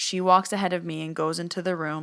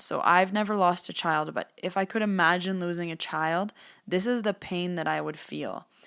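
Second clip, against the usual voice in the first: ordinary talk, nothing marked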